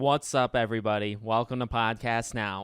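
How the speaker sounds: put-on, low, level, flat monotone. Podcast host opening the episode: fake monotone voice. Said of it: "my monotone voice".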